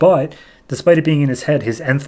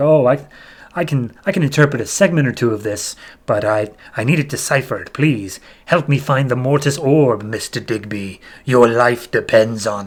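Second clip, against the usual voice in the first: mock sinister, threatening, scary villain voice. Retelling a story, the speaker voices a mysterious figure threatening a man; scary voice. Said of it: "the scary voice, is like".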